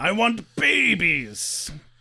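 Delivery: mild, half-hollered troll voice yell. Retelling a TV scene where the troll yells: imitating a troll yelling. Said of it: "yelling for babies".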